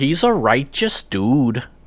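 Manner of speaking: put-on slow, unhurried Chicago accent. Quoting her line from the John Hughes movie in a Chicago accent. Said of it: "with her like Chicago accent".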